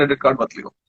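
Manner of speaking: normal talking voice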